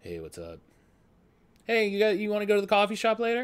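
easygoing, laid-back big-guy voice, swooping and casual. Acting out a chill big guy from high school: imitating a chill big guy. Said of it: "he seems like that chill big guy".

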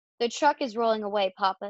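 plain

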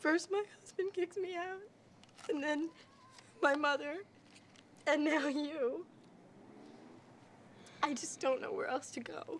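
in tears. Kicked out by her husband and mother, she speaks to the other person, crying. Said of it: "please don't cry".

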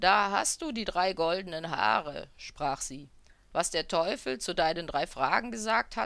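ordinary delivery

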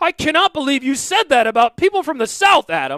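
play-acted, very high, shrill, loud indignant outburst. Speaker acting out an offended listener objecting to him: mock-offended listener. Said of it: "if anyone's offended".

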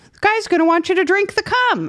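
funny voice, pitched very high. Retelling what comes up first when someone searches for them: imitating own past funny voice. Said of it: "me talking in a funny voice".

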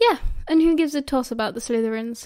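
ordinary talk

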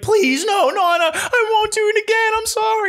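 mock hysterical crying, very high, drawn-out sobbing. Retelling begging a grandmother not to call the cop: imitating own hysterical crying plea. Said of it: "cried hysterically to the point I was grabbing her".

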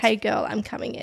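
put-on creepy, calm tone. Speaker repeats what a man at the window said, in a creepy calm voice. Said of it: "in a creepy, calm voice".

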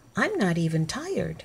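ordinary delivery, nothing marked

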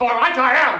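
shouting. Told by another player to just shout, giving in and shouting. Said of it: "I'm shouting!".

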